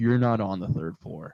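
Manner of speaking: soft soothing reasoning tone. Retelling how a hotel worker spoke to them: imitating someone reasoning gently. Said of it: "trying to, like, reason with me".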